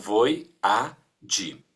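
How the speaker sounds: very slow, syllable-by-syllable voyage.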